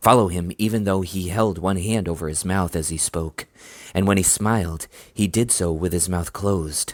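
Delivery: ordinary delivery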